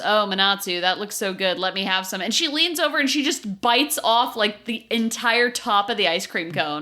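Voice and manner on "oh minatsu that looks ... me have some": put-on dead-level, absolutely flat, expressionless delivery. Retelling how Laura answered Minatsu about her ice cream: imitating Laura's deadpan. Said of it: "Laura absolutely deadpan goes".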